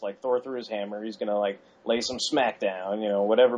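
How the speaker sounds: plain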